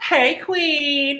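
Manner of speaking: put-on Valley Girl accent, way up high. Trying out voices with friends, showing how easy a valley girl voice is. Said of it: "Valley Girl's easy".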